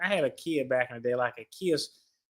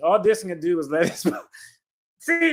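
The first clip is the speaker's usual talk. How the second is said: reading through laughter, words broken by giggles; 3 semitones higher, 4 dB louder than usual. Reading a passage aloud on the show, laughing while reading. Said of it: "Now I can't not laugh".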